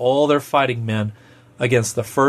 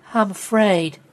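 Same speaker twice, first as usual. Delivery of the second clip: said in a small, little voice; 8 semitones higher than usual. Narrator reads a woman's line at the family dinner table, small voice. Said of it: "Jen said in a small voice".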